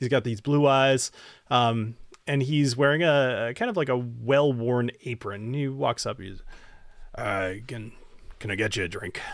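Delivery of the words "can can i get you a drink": put-on dwarf voice, lower and quieter. Describing a scene and voicing the dwarf bartender as he walks up, dwarf bartender voice. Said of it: "a dwarf bartender".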